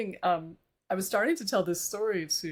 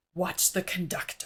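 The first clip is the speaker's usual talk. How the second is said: put-on mutter under breath, much slower; 4 dB quieter than usual. Retelling what the woman next to her at rehearsal said, imitating someone muttering under breath. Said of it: "under her breath".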